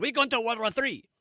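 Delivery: aggressive, high tyrant voice. Showing how an aggressive speaker would announce war: Hitler impersonation. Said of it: "That was my Hitler impersonation".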